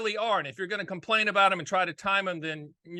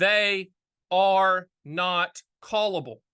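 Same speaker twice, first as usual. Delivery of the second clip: drawn out, very slow, deliberate, word by word; 4 dB louder than usual. A host explaining fixed rate annuities to listeners, spoken very slowly. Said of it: "I'm going to say this very slow".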